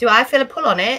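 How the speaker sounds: put-on weirdly heavy, thick British accent. A player in a fantasy game asks a question, in a weirdly thick British accent. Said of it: "that was really weirdly British accent".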